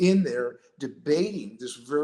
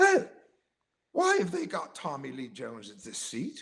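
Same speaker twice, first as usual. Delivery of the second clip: bad, put-on, swooping Australian accent. Retelling what Spielberg's right-hand man said, walking around the stickers: lousy Australian accent. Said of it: "I do a very lousy Australian accent".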